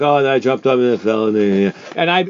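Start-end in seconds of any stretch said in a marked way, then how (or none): 0.0-1.3 mock dull flat delivery, lower pitch. Mimicking a player's boring description of a soccer save: imitating a boring flat retelling. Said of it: "was boring".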